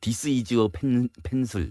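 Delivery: put-on Korean-accented English. Retelling a college friend's English, the speaker uses heavy Konglish pronunciation. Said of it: "완전 콩글리시 발음".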